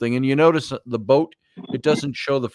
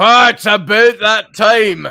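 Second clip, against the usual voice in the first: put-on Scottish accent, very high and very loud; 10 semitones higher, 10 dB louder than usual. Trying out accents with others, repeating a phrase: scottish accent. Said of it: "How's our accents?".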